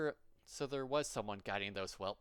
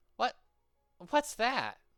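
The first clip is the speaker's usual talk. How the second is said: high, raised, put-on young little girl voice; 11 semitones higher, 7 dB louder than usual. Lacking Tara, the speaker attempts a little girl voice for the character himself. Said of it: "I can't do little girl voices".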